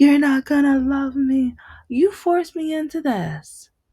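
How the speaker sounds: very high, loud, sobbing, tearful screaming wail. Retelling his outburst the week he got a denture: imitating someone screaming and crying. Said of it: "he kept screaming and crying, like".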